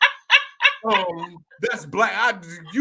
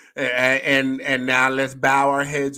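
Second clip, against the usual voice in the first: ordinary talk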